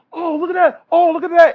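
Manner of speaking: high astonished gasp.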